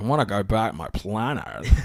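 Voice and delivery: bad, missed attempt at a lisping voice. Quoting a movie character's line, attempting a bad Ben Mendelsohn impression. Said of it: "I can't do Ben".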